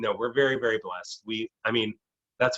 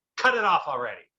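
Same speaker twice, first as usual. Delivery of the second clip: put-on high-pitched grandmother voice; 5 semitones higher than usual. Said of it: "That's just his voice in my head".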